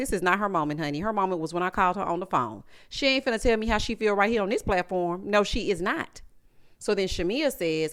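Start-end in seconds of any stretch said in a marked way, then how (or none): none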